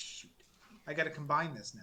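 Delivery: ordinary talk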